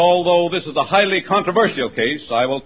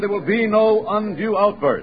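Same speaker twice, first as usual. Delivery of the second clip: ordinary delivery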